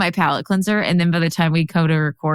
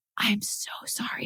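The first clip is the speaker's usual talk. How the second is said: very soft, breathy little whisper; 5 semitones higher, 12 dB quieter than usual. Retelling apologizing to a startled bunny in a shed: imitating own whisper. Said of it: "And I whisper".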